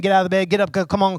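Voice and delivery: put-on freaking-out voice, fast, frantic urging. Retelling a servant's words as he wakes his master: imitating someone panicking. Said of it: "freaking out".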